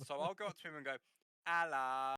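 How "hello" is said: loud, over-the-top, exaggerated London accent. Describing going up to someone to say hello, in an exaggerated London accent. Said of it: "in a more exaggerated London accent".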